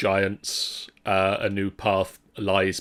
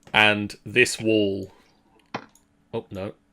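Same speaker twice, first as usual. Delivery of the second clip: usual speaking voice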